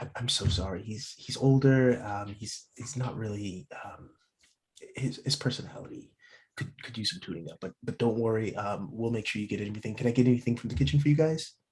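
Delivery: halting, hushed half-whisper under the breath. Game master voicing the waitress, speaking to the players: half-whispering. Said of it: "and whispers to you".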